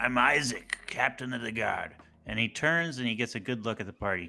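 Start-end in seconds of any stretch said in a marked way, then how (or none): 0.0-1.9 gravelly character voice, slower. Playing the captain of the guard meeting a new party of adventurers: gravelly voice. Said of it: "comments in a gravelly voice".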